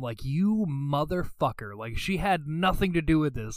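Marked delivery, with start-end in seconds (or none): 0.2-1.8 acted-out angry cursing outburst. Retelling own reaction as a kid to a game villain: retelling own angry outburst. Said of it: "it made me so mad as a kid".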